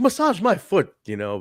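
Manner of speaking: high-pitched, loud, sassy voice. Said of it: "she's speaking with that accent".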